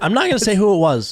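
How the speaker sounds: high little crack in the voice. Talking about paddles, the speaker's voice cracks mid-sentence. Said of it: "little voice crack there".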